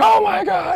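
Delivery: very high, loud, full-on scream. Retelling getting up during a game on TV, imitating own screaming at TV. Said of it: "started screaming at my T V like".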